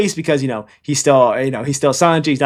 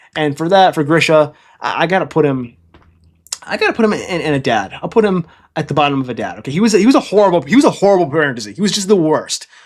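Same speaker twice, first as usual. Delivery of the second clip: ordinary talk, nothing marked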